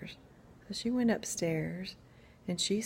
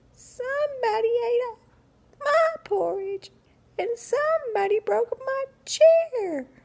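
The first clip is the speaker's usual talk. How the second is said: tiny, squeaky voice, very high and loud; 10 dB louder than usual. Reading a story, the tiny baby bear finds his porridge gone, in a tiny squeaky voice. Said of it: "he said in his tiny squeaky voice".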